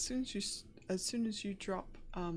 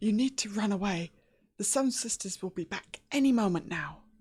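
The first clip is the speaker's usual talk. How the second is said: put-on eerie, very loud small girl's voice; 10 dB louder than usual. Narrating the scene, the speaker voices the straw doll stepping forward, little girl's voice. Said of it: "in this kind of little girl's voice".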